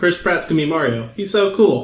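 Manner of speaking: ordinary delivery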